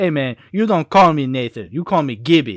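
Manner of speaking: laid-back, cool street-talk swagger. Retelling how the friend Gibby acts: imitating Gibby acting urban. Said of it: "and he goes".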